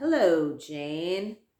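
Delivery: loud, sickly, sneering snide tone, drawn out. Narrator reading a policeman's greeting from above the couple; sickly, snide voice. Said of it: "sickly, snide voice above us said".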